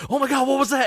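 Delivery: very high, startled, panicked, freaked-out cry. Retelling a prank on the listener: imitating someone freaking out. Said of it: "just freaking out".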